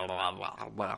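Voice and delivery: low, soft, lazy mumble. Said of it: "con él se nota más que a veces es como".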